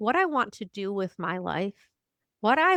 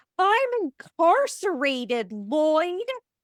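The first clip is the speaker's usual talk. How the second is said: high, screamed outburst; 8 semitones higher, 4 dB louder than usual. Retelling a movie scene where a man screams at another: imitating someone screaming. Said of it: "he just screams at him".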